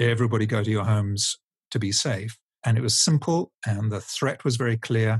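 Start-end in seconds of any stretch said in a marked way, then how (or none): none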